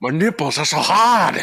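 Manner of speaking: put-on light, slight Scottish accent. Quoting a line from South Park, sounding a little Sean Connery-ish. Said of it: "That sounded a little Sean Connery-ish".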